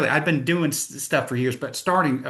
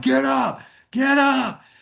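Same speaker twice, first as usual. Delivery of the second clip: mock very high, creaky, drawn-out rough yell; 12 semitones higher, 4 dB louder than usual. Retelling being knocked down while sparring: imitating someone yelling. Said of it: "and he's yelling".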